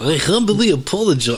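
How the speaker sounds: put-on spoken in a Russian accent. Copying the other's joke apology: Gru voice. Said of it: "This Gru from Despicable Me".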